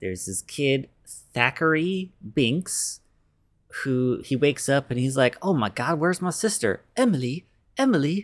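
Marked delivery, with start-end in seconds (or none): 5.4-8.2 put-on high, pitched-up, olde-worlde old-timey period English. Retelling the movie's opening as Thackery Binks: old-timey speech. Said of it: "They all talk like that".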